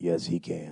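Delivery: very deep, very low, thick and raspy voice. Retelling a man who came up and spoke to him, in a thick, raspy voice. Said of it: "with a thick, raspy voice".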